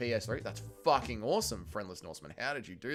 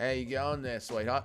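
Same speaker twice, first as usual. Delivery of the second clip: put-on blackout drunk voice, slurring. Doing a requested impression of himself blackout drunk at a party: put-on blackout drunk voice. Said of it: "Impression of backwards hat [name] getting blackout drunk".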